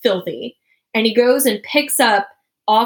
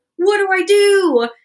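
put-on panicked screaming, higher pitch; 10 semitones higher, 3 dB louder than usual. Retelling finding a bird stuck in the car door: retelling own panicked scream. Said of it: "So then I'm screaming".

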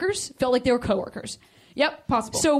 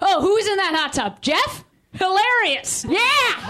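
mock yelling, slower; 8 semitones higher than usual. Mocking a guy at a hot tub, retelling his yelling. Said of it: "just yelling".

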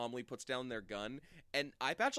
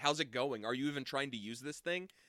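ordinary talk

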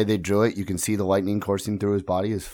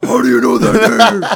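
hard, high, rough, rasping, shrill, aggressive yell; 14 semitones higher, 10 dB louder than usual. Quoting a line from Batman vs Superman, in a Batman yell. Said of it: "Why are you yelling at me like that?".

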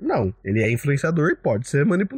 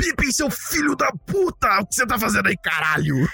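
put-on shrill, high, aggressive, furious angry tirade; 9 semitones higher than usual. Doing a more aggressive Gandalf impression in the game: aggressive Gandalf impression. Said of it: "A minha imitação é um pouco mais agressiva".

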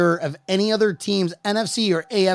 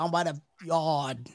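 slow, fake Boston accent on every word; 3 semitones lower, 11 dB quieter than usual. Joking about accents after lackluster: put-on Boston accent. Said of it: "No, that's Boston".

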